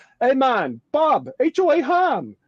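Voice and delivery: put-on drawn-out, slow, sing-song Jamaican accent, very high. Telling an audience about meeting a fan from Jamaica, doing a Jamaican accent imitation. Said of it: "that's my best Jamaican accent imitation".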